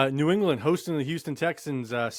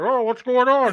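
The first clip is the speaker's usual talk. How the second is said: shrill, high-pitched, very loud yelling voice; 10 semitones higher, 9 dB louder than usual. Teasing the other speaker about waking up bleeding: Bane voice. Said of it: "you're like Bane from Batman".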